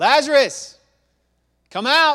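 very loud, very high-pitched shout. Retelling the lazarus story to listeners, acting out a loud shout. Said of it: "takes it up another octave so everybody hears".

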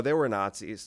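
ordinary talk

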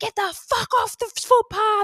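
mock, very high, shrill swearing shout. Retelling how a passing cyclist yelled at them: imitating a yelling cyclist. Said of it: "yelling at us".

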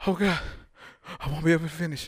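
mock breathless gasping. Acting out a woman running out of breath mid-story: imitating running out of breath. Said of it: "ran out of breath".

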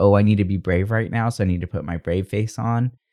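ordinary delivery

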